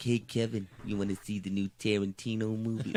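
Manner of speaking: put-on New York accent. Retelling a story, speaker imitates how Weinstein talks with a New York accent. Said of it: "he talks like this".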